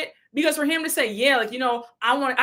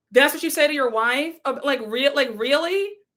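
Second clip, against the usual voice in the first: normal talking voice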